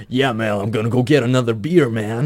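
exaggerated, over-the-top, put-on American accent. Retelling how friends sounded when first heard: imitating an over-the-top american accent. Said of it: "it's like the accent buffing out".

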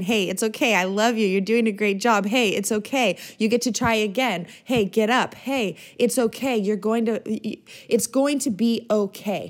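normal talking voice

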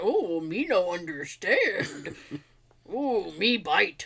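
very slow, drawn-out, dumb-sounding speech. Retelling how a toy robot character talked, Grimlock's dumb talk. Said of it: "He talked stupid".

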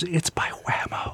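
whispering. Retelling what a guy says after walking up to him, whispered. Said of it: "And then he whispers".

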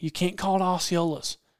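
plain

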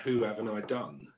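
ordinary talk

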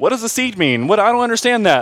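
high, mock baffled, confused tone. Preaching on the Greeks, imitating the Pharisees who miss the point: imitating confused Pharisees. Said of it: "I don't know why I made them sound like that".

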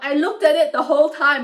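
high, loud protesting tone.

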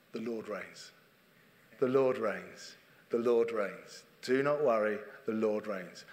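slow, unhurried, rather posh middle-class voice. Retelling what a vicar said in staff meetings: Sandy Miller's slow posh voice. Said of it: "in his rather middle-class posh voice".

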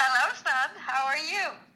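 animated acted-out reading. Redoing a parent's line after being told to dig into acting chops: expressive acting read. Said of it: "dig into your acting chops".

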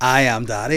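normal talking voice

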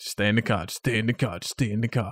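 plain

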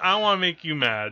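normal talking voice

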